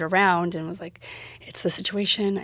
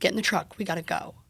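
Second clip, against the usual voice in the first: put-on cold, terse, curt, abrupt delivery. Retelling how an angry partner ordered them into the truck: imitating a cold, abrupt order. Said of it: "Cold, short, and abrupt".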